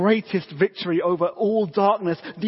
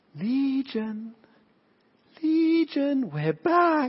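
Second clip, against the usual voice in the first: haunting, eerie, high demonic voice; 7 semitones higher than usual. Telling of the freed man, voicing the enemy coming back, in Legion's haunting voice. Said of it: "that haunting voice would come back of the enemy".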